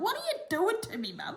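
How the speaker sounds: very high, tiny little cat voice. Holding the cat up to the camera, voicing the cat. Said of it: "He's like".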